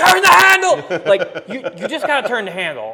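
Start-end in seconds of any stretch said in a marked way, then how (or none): 0.0-1.0 urgent, very loud, high-pitched shrieking scream. Retelling coaching people reeling in a fish, screaming at them. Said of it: "I'm screaming at you going".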